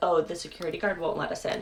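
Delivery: ordinary talk, nothing marked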